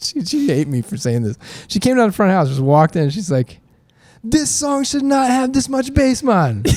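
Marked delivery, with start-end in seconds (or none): 4.2-6.6 very high, terrible put-on Jamaican accent. Retelling what she said at the first show he mixed, in a terrible Jamaican accent. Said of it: "that's a terrible Jamaican accent".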